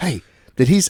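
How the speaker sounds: put-on, dead serious tone of voice. Retelling a friend's reaction at a restaurant: imitating John's serious tone. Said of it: "John gets all serious".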